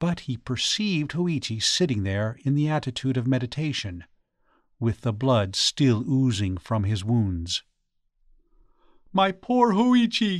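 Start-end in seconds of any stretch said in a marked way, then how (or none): 9.1-10.4 very high, shocked, startled outcry. The priest finds the blind man sitting with blood oozing from his wounds, startled cry. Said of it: "cried the startled priest".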